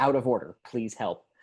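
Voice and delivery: ordinary talk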